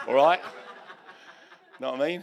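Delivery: loud Essex accent. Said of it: "they talk more like Barry".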